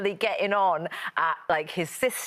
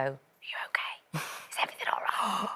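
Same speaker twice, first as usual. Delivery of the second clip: secretive, conspiratorial little whisper; 6 semitones lower, 7 dB quieter than usual. Retelling asking a crying toddler adult questions: imitating a conspiratorial tone.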